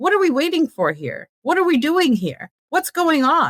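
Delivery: high-pitched, barely contained, held-back fury. Asking why no legal action has followed a killing: barely contained anger. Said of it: "just pissed off and trying to come across as a rational person".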